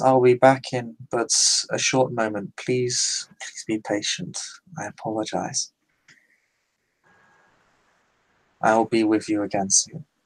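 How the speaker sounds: soft-spoken, very soft, gentle and courteous. Describing how she speaks to the crowd before stepping away: very soft tone. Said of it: "she speaks uh in a very soft tone to them and says".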